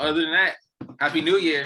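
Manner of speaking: high, loud, belted-out voice in a Baltimore accent.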